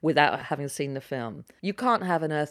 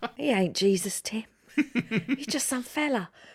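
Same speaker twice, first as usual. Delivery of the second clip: put-on, pitched-up Cockney drifting into Australian; 7 semitones higher than usual. Testing an accent on the other speaker before asking how it sounds, attempted Cockney accent. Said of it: "How's my accent going?".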